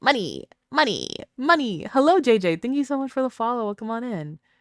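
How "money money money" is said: put-on cartoon voice with swooping pitch swings. Announcing a Mr. Krabs voice, then saying money in a Mr. Krabs voice. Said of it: "mister Krabs' voice".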